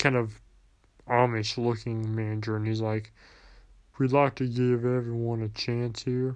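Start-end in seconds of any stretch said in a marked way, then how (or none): 4.0-6.4 put-on flat monotone delivery. Retelling what a manager said at an interview, imitating his monotone voice. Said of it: "He had a monotone voice".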